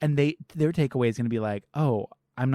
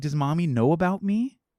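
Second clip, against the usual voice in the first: begging, pleading tone, pitched higher; 4 semitones higher than usual. Retelling a scene where the daughter pleads with her father: imitating a begging girl. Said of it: "She's, like, begging".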